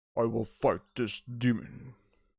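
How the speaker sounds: deep, low heroic voice. Reviewing a movie, the speaker plays a hero in a deep hero voice. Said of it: "I have a deep hero voice".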